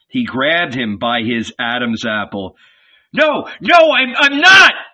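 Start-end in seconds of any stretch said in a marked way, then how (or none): 3.1-4.7 very high, slow, drawn-out screaming cry. Narrating Peter, grabbed by the throat by a young stalwart, screaming. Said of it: "screamed Peter".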